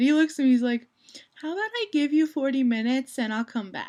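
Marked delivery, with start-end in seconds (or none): 1.3-3.9 snarky, sarcastic bargaining tone. Retelling a six-year-old cousin's reply: imitating a sarcastic kid. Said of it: "sarcastic as hell".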